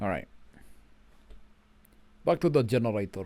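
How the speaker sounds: put-on Russian accent. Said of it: "Why do I have the Russian accent?".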